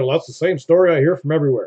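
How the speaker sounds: ordinary talk, nothing marked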